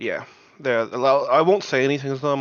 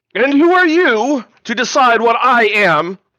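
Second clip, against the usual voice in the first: menacing shout, very high and full volume; 10 semitones higher, 9 dB louder than usual. A player's character in a tabletop game yells at others: most intimidating yell. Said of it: "yell out in the most intimidating voice".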